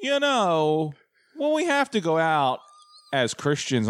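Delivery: high, lilting, sing-song, drawn-out, swooping voice. Retelling a homily from a guy who sounds like the Dean: imitating the Dean. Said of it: "it's the Dean".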